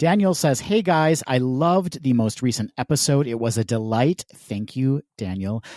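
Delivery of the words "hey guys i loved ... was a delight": plain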